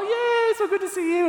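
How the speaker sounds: mock very high, loud, gushing, happy excited voice. Retelling people greeting the speaker's daughter as she comes out, retelling a happy excited greeting. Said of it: "they're all happy and excited".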